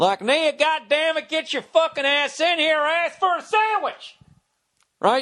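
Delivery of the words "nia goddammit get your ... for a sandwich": very high, ridiculous, exaggerated southern accent. Demonstrating how the speaker makes fun of rednecks, in a southern voice. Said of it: "like the way I'll do like a southern voice".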